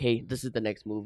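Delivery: mock wrestler whisper. Describing wrestlers passing signals face to face: imitating a wrestler whispering. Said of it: "you can see them whispering".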